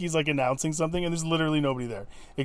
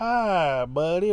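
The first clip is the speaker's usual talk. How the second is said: folksy, drawn-out Texas drawl. Describing the mom lady on her porch, quoting her: imitating the mom lady's texas accent. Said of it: "they all have, like, Texas accents".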